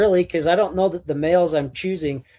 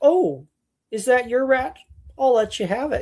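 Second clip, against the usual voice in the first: play-acted, higher, excessively courteous voice; 7 semitones higher than usual. Imitating a dog who is too polite: imitating an overly polite dog. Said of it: "polite. She's like".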